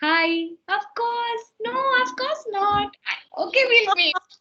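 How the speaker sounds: sweet, very high-pitched voice. Showing how a voice sounds when talking to a brand-new boyfriend. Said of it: "a boyfriend from half an hour".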